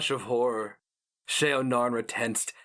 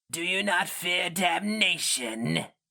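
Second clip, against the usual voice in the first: icy, slow, high, rasping inhuman alien voice; 7 semitones higher than usual. A creature speaks in an archaic tongue to a hero mage it looms over, probing him. rasping, icy, inhuman. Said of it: "The glistening [name] rasped, speaking an archaic intonation of Hirimsu, his inhuman voice falling like a flake of ice upon sweaty skin. / He had stepped into [name]'s blind flank and now loomed over".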